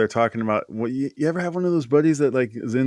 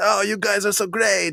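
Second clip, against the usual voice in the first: put-on Italian accent, pitched higher; 8 semitones higher than usual. Retelling a taxi story about an Italian man who spoke no English, Italian accent. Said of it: "I like how you're doing this Italian accent".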